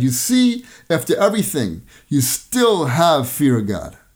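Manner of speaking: thunderous, slow, swooping delivery. Retelling the rabbi's answer to a young man, retelling a thunderous declaration. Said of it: "and thunderously said".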